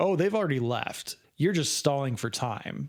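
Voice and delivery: ordinary talk, nothing marked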